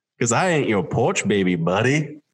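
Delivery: put-on smooth, very slow drawl. Repeating a quote a man said, smooth slow-as-molasses drawl. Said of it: "smooth, slow as molasses accent".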